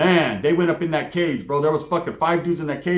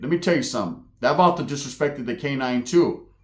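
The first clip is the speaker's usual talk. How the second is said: usual speaking voice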